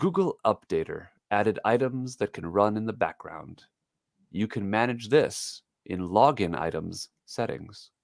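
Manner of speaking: slow, measured, deliberate narrator-style reading aloud. Reading a screen notification aloud to show audiobook pace: slow audiobook reading pace. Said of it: "That's how slow it has to be".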